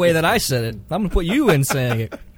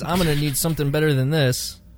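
ordinary talk, nothing marked

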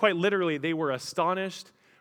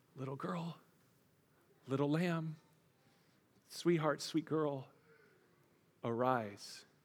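put-on soft, gentle, tender, loving tone; 10 dB quieter than usual. Retelling words spoken to a girl taken by the hand: imitating an affectionate tone. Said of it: "with this affectionate tone".

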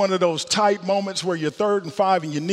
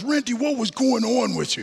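put-on Boston accent, much higher pitch; 4 semitones higher than usual. Retelling the coach going through game film and reaching their part; Dick Stanfield's Boston accent. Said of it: "That's his Boston accent".

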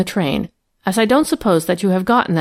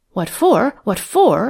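eager, higher pitch; 4 semitones higher than usual. She echoes Mary's question back to her, eager. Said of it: "she repeated eagerly".

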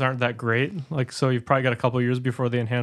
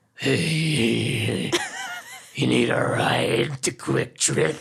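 put-on horrifying creepy man voice. Retelling a driver who rolled down his window to offer a ride: horrifying voice. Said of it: "says in the most horrifying voice".

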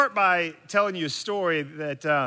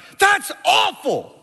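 shrill, very loud, high-pitched screaming; 8 dB louder than usual. Retelling a friend's dad yelling at him from the stands: imitating a dad screaming. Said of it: "His dad's voice would scream like".

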